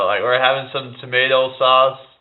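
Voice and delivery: put-on American accent, quick and high. Streamer showing chat how he says tomato: American accent. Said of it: "How's my American accent?".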